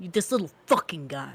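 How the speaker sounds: mock spiteful voice. Redoing their rendition of a little guy's line, imitating a spiteful guy. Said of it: "It's so spiteful".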